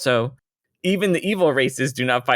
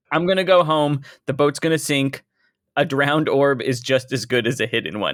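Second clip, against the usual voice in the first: ordinary talk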